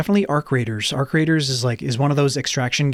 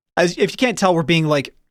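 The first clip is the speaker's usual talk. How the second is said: ordinary delivery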